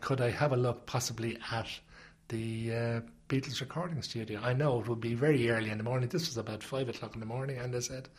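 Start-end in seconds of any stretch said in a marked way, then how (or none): none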